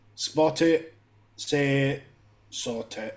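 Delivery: put-on very slow, utterly bored voice with Scottish accent. Retelling a transport announcement, the speaker imitates a bored scottish voice. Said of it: "this really bored Scottish voice just goes".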